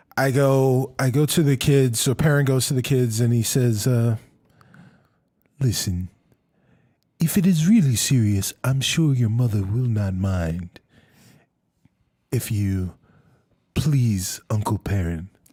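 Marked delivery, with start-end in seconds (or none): 5.6-15.3 low, sinister, creepy in-character voice. Speaking as a parent character to the kids: creepy-sounding in-character line. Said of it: "Ooh, that sounded creepy".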